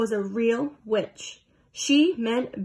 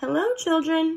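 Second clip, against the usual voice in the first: honey-sweet, high-pitched voice; 5 semitones higher than usual. Reading a story, the narrator gives Miss Nelson's greeting to the children in a sweet voice. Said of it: "someone said in a sweet voice".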